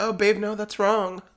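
condescending, patronizing tone, pitched high. Retelling own replies to a man online: imitating own condescending tone. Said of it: "It's so patronizing and condescending".

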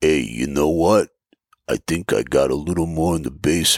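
put-on deep voice like an old boxer. Recalling a scene where an old Rocky sits with Paul, Rocky impression. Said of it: "You got my Rocky impression".

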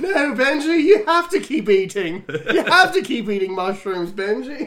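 put-on English accent. Quoting a scene from a movie, in a put-on English accent. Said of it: "I'm doing a fucking English accent".

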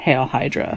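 barely breathed, hushed secret whisper. Retelling a film scene where Steve Rogers leans over to an agent: imitating Steve Rogers whispering. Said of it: "and he whispers".

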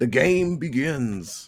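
creepy horror villain announcer voice. Host introduces the film under review in a Saw-style voice. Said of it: "Sounds like Saw".

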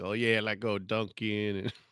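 put-on heavy Boston accent. Retelling a commercial parody: imitating a heavy Boston accent. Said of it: "he doing the heavy Boston accent".

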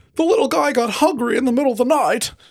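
very high, tiny little creature voice. Recapping a scene, voicing what Spike says, Spike character voice. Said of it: "That's my voice for him now".

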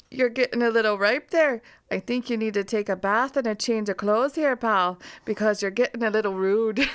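loud, horrible put-on Canadian accent. Quoting what a woman would say if she were being nice: horrible Canadian accent. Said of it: "in my horrible Canadian accent".

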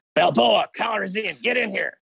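angry, pissed-off voice, very high pitch. Acting out a cop movie scene as the pissed off lieutenant: put-on angry police lieutenant. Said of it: "You get the pissed off lieutenant".

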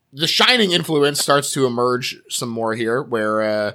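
ordinary delivery

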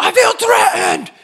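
mock drunk, high, loud wailing whine, threatened-sounding.

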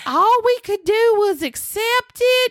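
put-on really high-pitched, strong Alabama accent. Retelling what Carol said about Edith leaving: high-pitched Alabama voice. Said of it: "who has this really high-pitched voice in very Alabama".

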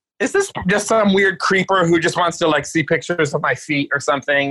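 ordinary talk, nothing marked

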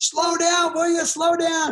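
play-acted, shrill, very high, full-lung screaming. Retelling a quad ride, the speaker acts out Brian screaming at the top of his lungs. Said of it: "screaming at the top of his lungs".

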